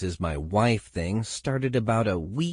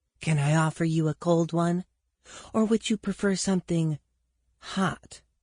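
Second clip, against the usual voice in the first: breathy, pitched-up, provocative tone; 9 semitones higher than usual. Reading aloud a character leaning against a door frame: breathy voice. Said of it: "he said in a breathy voice".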